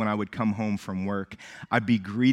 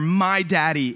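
put-on toddler yelling, sound muffled; 8 semitones higher, 5 dB louder than usual. A dad recalling his son's greeting routine, imitating a toddler yelling through a pacifier. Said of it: "yell through the pacifier".

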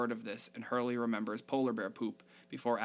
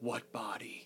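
creepy, still, whispered deadpan; 7 dB quieter than usual. Retelling how he answered a question about the body: creepy Stephen King sort of way. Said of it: "in that really creepy Stephen King sort of way".

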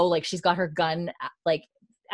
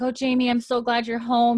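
mock teary voice, high, on the edge of crying; 5 semitones higher than usual. Retelling a scene where she greets jamie at the door: imitating someone crying. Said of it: "kinda crying right now".

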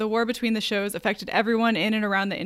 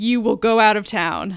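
menacing, frightening tone; 7 dB louder than usual. [name] insists Toon leave town after Toon refuses; frightening tone. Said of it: "[name]'s tone frightened Toon".

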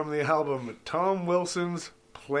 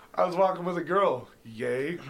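usual speaking voice

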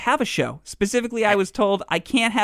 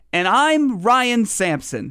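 very slow, drawn-out announcer promo voice. Speaker mimics the person addressed introducing himself in a promo: Ryan Sampson's promo voice. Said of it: "Promo voice".

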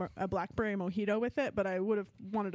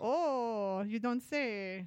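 terrible put-on Cuban accent; 2 semitones higher than usual. Taking turns trying accents with others, bad cuban accent. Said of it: "She sounds like a Cuban immigrant".

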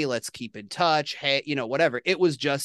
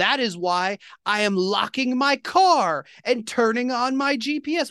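high, very slow and deliberate, drawn-out shouting; 9 semitones higher than usual. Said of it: "yelling at this guy".

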